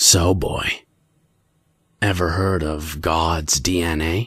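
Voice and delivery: mock gravelly voice. Retelling what Joe asked at McDonald's: Joe's raspy voice. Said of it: "asking me in a raspy voice".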